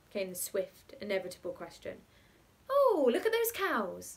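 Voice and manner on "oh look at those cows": very high-pitched, loud exclamation. The aunt answers Cyril's persistent questions, exclaiming. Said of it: "exclaimed the aunt".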